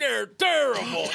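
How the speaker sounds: high, loud put-on old-man voice. Comparing two fans chatting at a bad game to old Muppets hecklers: Statler and Waldorf voice. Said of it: "old men like".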